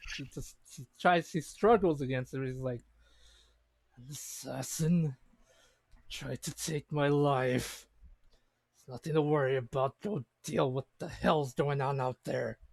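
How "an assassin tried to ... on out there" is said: gritty, angry snarling character voice. Voicing a captive who struggles while forced to speak: gritty snarling in character.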